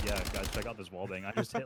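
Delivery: ordinary delivery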